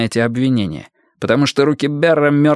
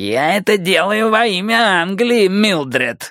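mock sneering hiss, high-pitched and taunting; 7 semitones higher than usual. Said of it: "передразнивая Пелфрея, прошипел Бэр".

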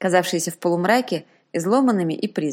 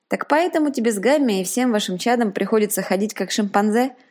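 usual speaking voice

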